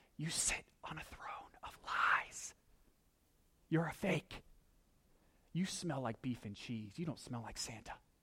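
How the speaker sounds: hushed whisper under the breath. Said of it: "they're kind of having this whispering conversation".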